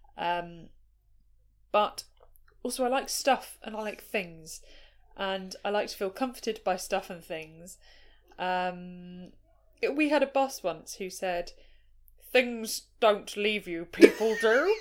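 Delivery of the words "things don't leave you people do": very loud, big booming character voice. Quoting a former shared boss's saying to friends: imitating the boss's voice. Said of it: "I just was not expecting the voice".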